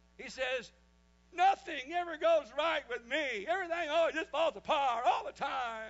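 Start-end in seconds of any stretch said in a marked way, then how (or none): 1.3-5.9 put-on very loud, high-pitched bawling wail. Retelling what the boat owner said while crying: imitating Bill crying. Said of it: "starts crying like a baby".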